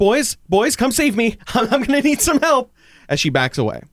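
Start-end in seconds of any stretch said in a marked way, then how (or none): 0.0-2.7 very high, shrill, high-pitched yell. A game master voicing a retreating character calling to the boys, yelling for help. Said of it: "She yells".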